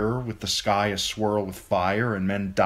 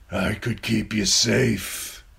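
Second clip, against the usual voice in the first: harsh, creaky, rough rasping voice. Narrator reading a man's line to Sansa as he holds her, raspy. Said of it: "he rasped".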